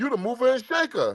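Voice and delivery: loud, high mocking tone.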